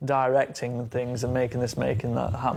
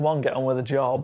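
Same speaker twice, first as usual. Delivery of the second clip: normal talking voice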